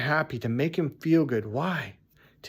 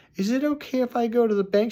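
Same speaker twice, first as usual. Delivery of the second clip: high, begging, pleading voice; 8 semitones higher than usual. Retelling how a coworker asked his wife for bank money: imitating a man begging. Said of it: "this fucking guy is begging".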